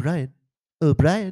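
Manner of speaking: high cartoon call. Swapping cartoon impressions, a speaker offers to do a Stewie impression. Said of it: "I can do the Stewie one".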